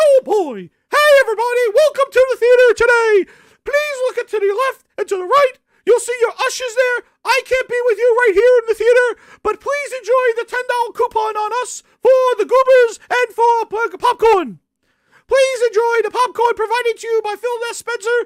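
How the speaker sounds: cartoon mouse voice, way up high. Imagining Phil Spencer greeting a theater audience from the screen, Mickey Mouse voice. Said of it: "he is friggin' Mickey Mouse".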